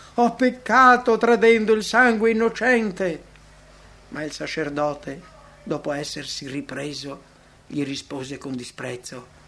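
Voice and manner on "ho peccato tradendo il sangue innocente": loud, high-pitched crying-out shout. A disciple, rebuffed by the priests, shouts again. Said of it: "Giuda gridò ancora".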